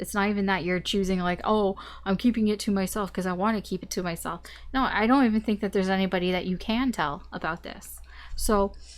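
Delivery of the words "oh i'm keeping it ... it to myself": normal talking voice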